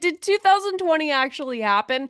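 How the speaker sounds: dripping sarcasm. Talking to Alyssa about past football teams, sarcastic mock disbelief. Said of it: "I'm being sarcastic there".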